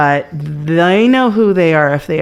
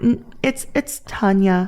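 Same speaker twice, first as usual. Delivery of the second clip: imitated kind, calm, gentle tone; 4 semitones higher, 5 dB quieter than usual. Act out her response when you slip up, imitating someone kindly and calmly correcting. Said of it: "very con- kindly, calmly".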